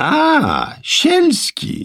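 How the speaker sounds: very high, swooping, drawn-out call, slightly impatient. Narrator reads a man in an overcoat hailing another man, calling out impatiently. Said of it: "z odcieniem niecierpliwości w głosie zawołał".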